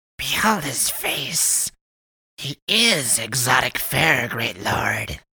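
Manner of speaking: very high, swooping, loud hissed words. Narrator reads a clawed creature turning a captive's face toward a great lord, hissing. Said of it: "she hissed".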